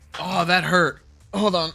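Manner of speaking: high, loud, teary, pained crying outburst. Hit by sudden pain, the speaker asks Gilbert to hold on, in pain, tearing up. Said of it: "I'm tearing up because that hurt".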